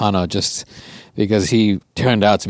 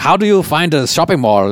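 put-on German accent with a higher pitch; 6 semitones higher, 4 dB louder than usual. Speaker retells asking people for directions to a mall, in a German accent. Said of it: "I asked in a German accent".

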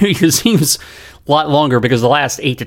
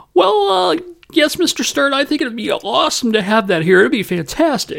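put-on very high, squeaky pubescent teen voice; 13 semitones higher than usual. Retelling own answer to the NBA commissioner on the phone: imitating own younger self, sounding like a pubescent fourteen-year-old. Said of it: "I sound like more like fourteen in a puberty".

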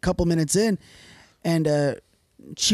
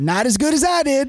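put-on Southern woman's voice, higher pitched; 7 semitones higher, 3 dB louder than usual. Retelling a woman's morning joke to the boys, imitating G-G. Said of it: "gave that southern chuckle".

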